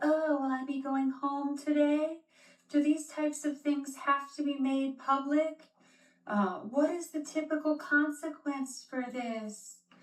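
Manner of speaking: put-on high little baby voice, babyish baby talk. Describing her arrest intake with police, imitating her baby voice. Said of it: "talking with a baby voice".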